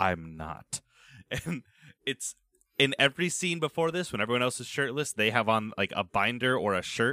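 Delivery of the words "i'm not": put-on icy voice, lower and quieter. Retelling a scene where Kurapika answers Krolo, imitating Kurapika's cold venom. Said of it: "in this cold steel voice, dripping with venom and malice".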